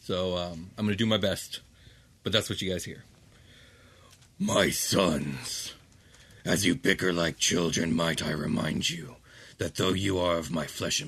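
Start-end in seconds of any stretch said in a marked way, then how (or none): 4.4-11.1 deep, grinding, gravelly dragon rumble. Voicing a father speaking to his sons for the listeners, deep rumbling voice. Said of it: "a voice that is both deep and rumbling".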